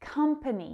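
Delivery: first syllable stressed in company. Showing learners how to pronounce the word: stress on COM in company. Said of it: "That stress is on the first syllable".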